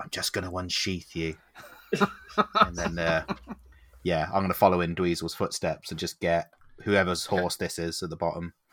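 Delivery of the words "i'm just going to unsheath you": hushed whisper, much quieter. Character whispering to a horse like a horse whisperer, whispering. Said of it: "just whisper".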